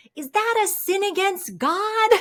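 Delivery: put-on small boy's very high shouting voice. Retelling a boy shouting in front of the entire Chick-fil-A: imitating a child shouting. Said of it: "he shouts out".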